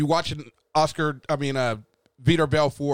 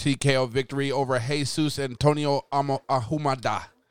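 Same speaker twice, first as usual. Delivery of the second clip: plain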